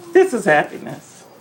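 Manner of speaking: talking through tears. Comforting someone who is crying with happiness, crying while talking. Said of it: "Now you got me crying".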